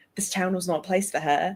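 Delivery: failed Australian accent, sliding toward British. Asked to do an australian accent, the speaker tries a line; australian accent slipping into british. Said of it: "I'm going British".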